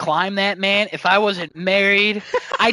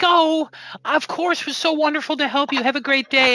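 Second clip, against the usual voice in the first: high, sugary, overly sweet, gushing niceness; 7 semitones higher than usual. Retelling how a former coworker spoke to customers: imitating Nancy being so nice. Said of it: "so nice to somebody".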